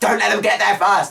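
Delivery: high-pitched shout.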